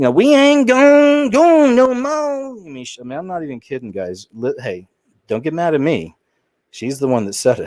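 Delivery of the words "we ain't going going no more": very high-pitched, very slow, fake put-on Southern drawl.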